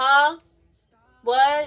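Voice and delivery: hollered, very loud voice. Recounting a movie date who answered the speaker's whispering: retelling a girl yelling. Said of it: "Why are you yelling?".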